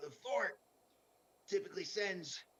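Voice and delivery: hoarse raspy voice. Relaying news to the group about the fort, raspy voice. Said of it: "I'm just gonna be talking like in a raspy voice for a while here".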